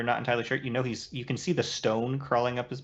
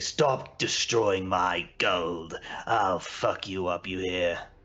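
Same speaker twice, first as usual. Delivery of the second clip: deep, slow, drawn-out monster voice; 4 semitones lower than usual. Voicing the Demogorgon during a fight in the game: Demogorgon voice. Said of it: "you'll hear the Demogorgon say".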